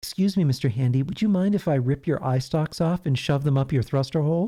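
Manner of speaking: sweetest honeyed, sugary-sweet polite delivery. A writer reads a favourite line of Susie's aloud; Susie's sweetest voice. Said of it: "in her sweetest voice".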